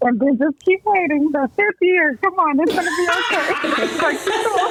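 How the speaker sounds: high, shouted, cheering encouragement.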